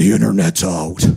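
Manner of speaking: extremely manly voice, very deep, low and loud. The speaker retells hearing one of the girls call from upstairs: extremely manly voice. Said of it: "I hear this extremely manly voice".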